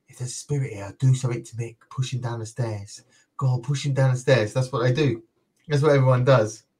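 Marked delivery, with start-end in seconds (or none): 0.1-4.5 imitated whisper, quieter. Retelling what the team says on investigations: imitating a whisper. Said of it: "the team sits there and whispers".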